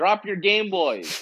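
mild half-yell in character voice. A character yells to a crowd with Game Boys exploding; yelling. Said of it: "so I yell out and I say".

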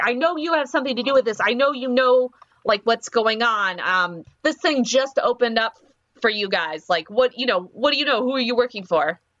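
insistent, accusing delivery. Voicing a soldier demanding answers at gunpoint: yelling. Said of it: "she's yelling".

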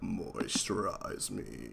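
eerie, very hushed, barely voiced creepy whisper. Offering to do the voice the other speaker likes, creepy put-on voice. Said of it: "What if I do the voice you like and I go".

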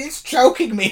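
high panicked scream. Retelling a moment from a match: imitating Paul Heyman screaming. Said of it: "Heyman just screaming".

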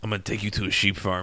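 put-on deep, hushed old-world European accent. Dave quotes his uncle from his childhood, in an old, deep european accent. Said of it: "old, deep European accent".

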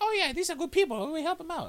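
very high-pitched character voice. Imitating a movie character agreeing to help: Jar Jar voice. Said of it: "I'm sorry for the fucking Jar Jar voice".

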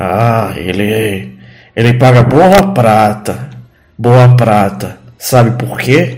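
low, guttural, halting, struggling, broken speech. Narrator voicing a character who struggles with the common tongue, guttural broken speech. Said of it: "ele fala com a voz gutural dele".

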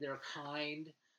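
mock sincere, sarcastic, gushing sweetly and loud.

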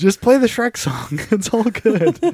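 mock gentle, soothing tone. Retelling security guards on stage calming a man down, imitating a consoling tone. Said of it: "Consoling him".

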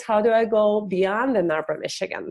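ordinary talk, nothing marked

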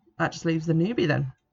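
ordinary delivery

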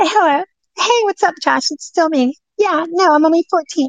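put-on very high-pitched little girl voice. Showing how phone calls with predators get answered: little girl voice. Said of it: "I answer the phone like this".

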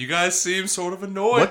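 put-on ghost voice. A ghost drops in on the hosts' podcast and talks to them, ghost character voice. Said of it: "I'm a ghost".

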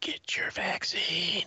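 very quiet, hushed, barely-there whisper. Mocking the president, imitating Biden whispering. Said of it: "And he whispers".

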